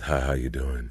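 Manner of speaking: deliberately deepened, low, dropped voice. As a young guy greeting a girl to impress, voice dropped low. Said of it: "you drop your voice".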